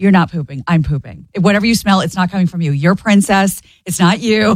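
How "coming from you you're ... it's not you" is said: ordinary talk, nothing marked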